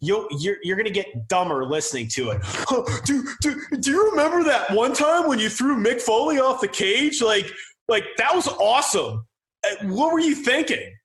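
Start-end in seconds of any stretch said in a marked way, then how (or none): 2.4-10.8 put-on high, childish voice like a twelve-year-old kid. Mocking an interviewer asking a wrestler a question: imitating Sam Roberts sounding childish. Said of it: "he sounded like a twelve-year-old".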